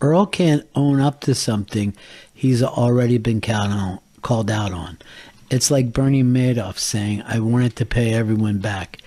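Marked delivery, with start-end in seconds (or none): none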